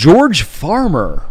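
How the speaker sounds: put-on American accent. Saying a guest's name the way they say it in America: American accent. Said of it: "Or as they say in America".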